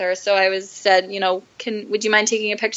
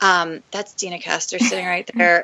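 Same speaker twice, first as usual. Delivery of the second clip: soft, hushed, whispered aside; 2 semitones lower than usual. Recalling spotting someone at the next table and telling her boyfriend, retelling a whisper. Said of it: "I like whispered".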